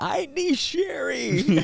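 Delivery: very high-pitched, loud yell. Retelling crying out for help on a podcast: retelling own scream. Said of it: "I was screaming, yelling out".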